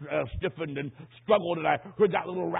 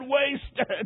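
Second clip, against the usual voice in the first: put-on single word forced out through sobs; 8 semitones higher than usual. Retelling the dying man sobbing the word again: imitating sobbing speech. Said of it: "Then he sobbed and said".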